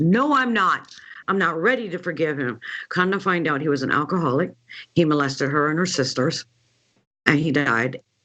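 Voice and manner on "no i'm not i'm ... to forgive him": angry, furious, stubborn, belligerent tone. Retelling a client's refusal to forgive her father: imitating someone belligerently mad. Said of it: "she got so belligerently mad".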